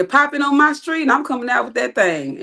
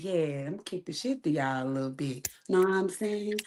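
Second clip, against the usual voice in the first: smooth, laid-back, slick put-on voice; 7 semitones lower, 13 dB quieter than usual. Retelling how a friend sounded after putting on a smooth voice. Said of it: "put that voice on, sit back in his chair".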